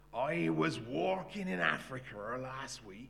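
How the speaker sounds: put-on loud, slow, broad Cornish accent and drawl. Retelling the first words Don Double spoke when he got up, in broad Cornish accent. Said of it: "in a broad Cornish accent".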